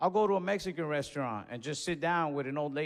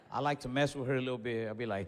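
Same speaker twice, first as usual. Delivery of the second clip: ordinary talk, nothing marked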